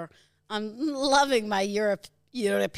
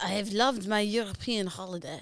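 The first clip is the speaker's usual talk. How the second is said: put-on French accent; 4 dB quieter than usual. Prompted to repeat the sentence in French style, the speaker tries a French accent. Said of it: "Go the French".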